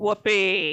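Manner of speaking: sarcastic, mock enthusiasm. Struggling to pronounce a word for someone who finds it funny, sarcastic. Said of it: "if you got the energy to be sarcastic".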